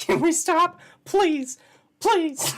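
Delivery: very high, swooping little imp voice. Begging the other speaker to stop: little imp voice. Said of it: "I just turned into, like, a, a little imp there".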